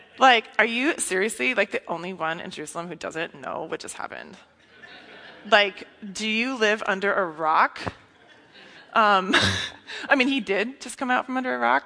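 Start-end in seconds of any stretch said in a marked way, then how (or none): 0.6-7.8 snarky, sarcastic, with a snarky edge. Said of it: "kinda snarky".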